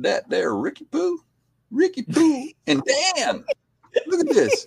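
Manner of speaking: very high, loud, swooping Southern drawl. Retelling a stranger who ran up to the window, in a southern drawl. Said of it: "with a southern drawl".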